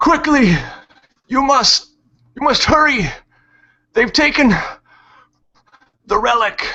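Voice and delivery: wounded and wincing, pitched very high. Game master voicing wounded Odaris, urging the players to hurry, wounded and wincing. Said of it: "And he kind of winces in pain".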